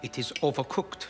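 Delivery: put-on soft German accent. Playing a scene, complaining the food is overcooked: soft German accent. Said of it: "talk about the German accent".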